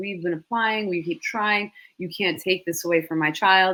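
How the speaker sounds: desperate, begging, pleading voice. Retelling parents testifying at a hearing, imitating desperate parents. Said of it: "you can hear the desperation in their voice".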